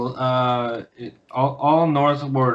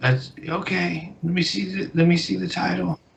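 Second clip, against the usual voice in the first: put-on elderly woman voice, higher; 6 semitones higher, 4 dB quieter than usual. Voicing an old tiefling woman greeting the players: old woman voice. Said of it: "a really old woman, uh, old tiefling".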